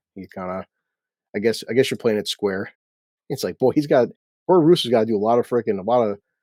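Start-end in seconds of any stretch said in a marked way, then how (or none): none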